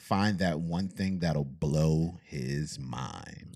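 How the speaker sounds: big, dramatic, cinematic movie-line delivery. Reading out a partner's answer about blowing his mind, sounding like a movie. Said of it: "Why you had to say it like that? You sound like a movie".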